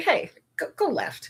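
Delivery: soft, gentle, small, unhurried whisper. Voicing the subtle inner nudge just described to listeners: very gentle, small voice. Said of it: "very gentle, small voice".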